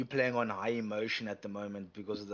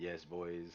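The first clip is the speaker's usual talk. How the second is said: put-on flat monotone, lower and quieter; 3 semitones lower, 7 dB quieter than usual. Retelling his reaction after he gets the last guy, imitating a monotone reaction. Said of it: "he can be very monotone at times".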